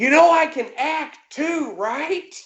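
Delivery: very high, stretched-out, drawn-out scream. Retelling an actor screaming up at the director on a crane: imitating Bill Moseley screaming. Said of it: "he screams at fucking Sam Raimi".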